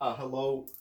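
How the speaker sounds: loud, snide, mocking, sarcastic tone. Imagining messaging him, then rejecting the sarcastic voice: sarcastic hello. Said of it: "but not in a sarcastic voice".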